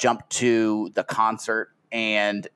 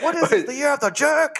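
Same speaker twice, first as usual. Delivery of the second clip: put-on Chinese accent, pitched way up. Recapping an episode, a speaker quotes a caterpillar character: chinese accent. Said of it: "like a Chinese accent".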